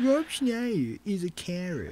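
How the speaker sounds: high American voiceover voice. Naming who plays a carrot, in a Trey Parker voiceover impression. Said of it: "That was my Trey Parker doing a voiceover accent".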